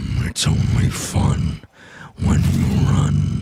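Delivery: very slow, throaty game-character voice. Speaker recalls a line from League, doing a Warwick voice. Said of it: "I could do a Warwick voice".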